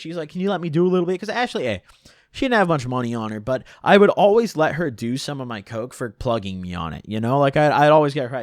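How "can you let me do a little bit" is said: put-on excited voice. Retelling how Ashley asked for a share: imitating excited Ashley. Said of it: "she's so excited".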